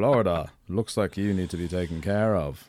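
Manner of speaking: put-on British accent. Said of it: "my British accent".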